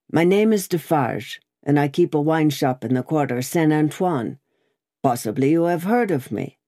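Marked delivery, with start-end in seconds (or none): none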